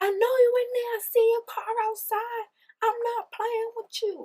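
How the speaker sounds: mock shrill hollering, very high, really loud. Retelling a woman pounding on a man's door, retelling a really loud yell. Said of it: "like really loud".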